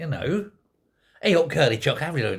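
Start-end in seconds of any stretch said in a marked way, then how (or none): 1.2-2.4 upbeat Yorkshire accent, faster pace. Speaker shows that Yorkshire people can sound upbeat, in an upbeat Yorkshire accent. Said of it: "You can be upbeat Yorkshire".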